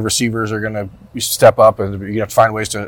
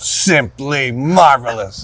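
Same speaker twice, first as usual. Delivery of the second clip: play-by-play sports announcer voice; 4 semitones higher than usual. Joking about what an announcer will say this week: Gus Johnson impression. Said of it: "get you guys to do your impression".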